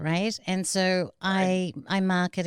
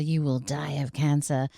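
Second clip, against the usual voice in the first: put-on crazy, angry voice, dropped lower; 4 semitones lower than usual. Recounting what an aunt said to the mother: imitating a crazy, angry dropped voice. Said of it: "Her voice dropped. She started talking in this crazy, angry kind of tone".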